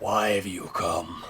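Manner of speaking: raspy, rasping voice calling out loudly. A game master voices someone calling from the other end of the room: raspy voice. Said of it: "You hear a raspy voice call out".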